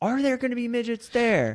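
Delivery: put-on, high-pitched screaming yell. Retelling asking loudly over the noise: retelling own scream. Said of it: "I remember when I'm screaming".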